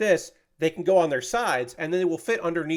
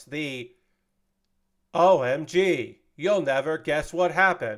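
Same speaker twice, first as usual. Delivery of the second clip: synthetic, computer-read text-to-speech delivery. Describing a video of doing the TikTok voice, demonstrating it: TikTok text-to-speech voice. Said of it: "the text to speech voice".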